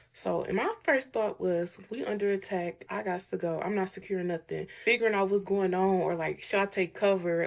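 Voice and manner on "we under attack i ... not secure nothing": ordinary talk, nothing marked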